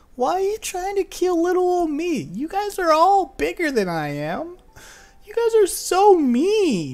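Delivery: very high, sulky, swooping, pouty whine. Voicing an imp with a pouty lip, held captive: pouty whining imp voice. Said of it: "He puts on a little pouty lip and everything".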